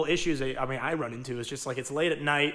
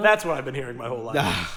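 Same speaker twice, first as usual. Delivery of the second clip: usual speaking voice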